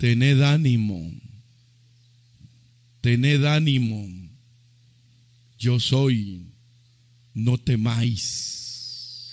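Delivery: low, slow, solemn, calm and sure voice.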